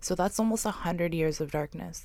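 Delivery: ordinary talk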